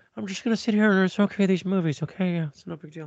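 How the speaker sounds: tiny, high, shrunken little-guy character voice. You play the filmmaker just okaying the movies, George Lucas as a little guy. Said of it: "my George Lucas is like a little guy".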